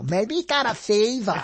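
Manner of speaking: attempted Brooklyn girl accent. Retelling what a woman would say, in an attempted Brooklyn girl accent. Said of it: "I'm trying to do it like a Brooklyn girl".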